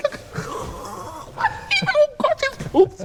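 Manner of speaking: overjoyed, very high, breathless squealing.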